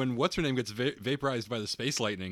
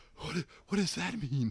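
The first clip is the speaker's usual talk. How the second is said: breathless, out of breath; 3 semitones higher, 4 dB quieter than usual. Acting out a man told his girlfriend became a robot: breathless. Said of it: "it's like breathlessly like".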